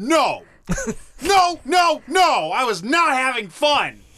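high, drawn-out, upset and agitated tone. Denying having fun playing games while the others suffered: upset and worked up. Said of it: "calm down, buddy".

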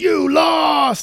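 all-out shrill, booming shout, very high and very loud. Recapping a story, acting out a character's outburst: retelling a yell. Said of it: "he like yells".

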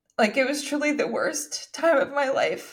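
talking through tears. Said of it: "Even though I'm crying".

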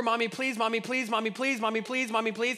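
put-on whiny, pleading kid voice, repeated over and over. Imitating a kid at the grocery store begging: imitating a nagging child. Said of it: "like the kid at the grocery store".

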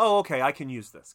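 plain

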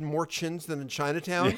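ordinary talk, nothing marked

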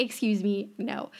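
plain

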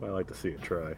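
very quiet, low muttering under the breath. A character responding to a threat, said under the breath. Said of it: "I said that under my breath".

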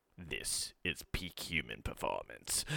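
very low, deep, raw, slow, hushed voice. Waking with a voice raw from snoring, the speaker does an Emperor Palpatine voice. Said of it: "I sound like this".

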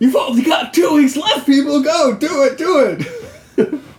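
very high-pitched, frantic, manic announcer voice. Imitating the film's announcer, likened to a manic spaceman: imitating the film's announcer, manic. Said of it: "He doing his Manic Spaceman Lego movie".

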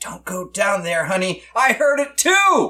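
spooky whispering voice. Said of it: "you hear a whisper from the closet saying".

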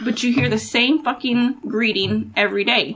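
normal talking voice

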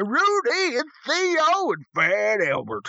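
terrible, very high, very slow, swooping voice. Showing where the prospector voice started: terrible Bill Cosby impression. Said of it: "a terrible Bill Cosby impression".

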